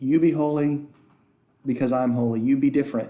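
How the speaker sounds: normal talking voice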